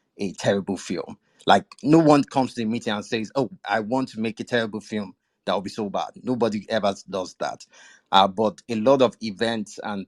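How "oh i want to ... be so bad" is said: ordinary talk, nothing marked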